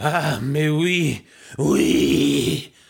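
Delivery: grunted, French-sounding "mais oui". Reading a story aloud, the narrator voices the mistress's French reply; grunted. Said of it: "the mistress grunted".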